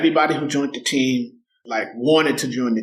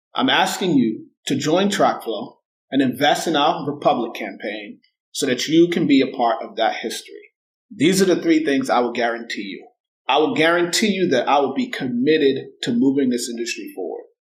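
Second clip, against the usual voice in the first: ordinary talk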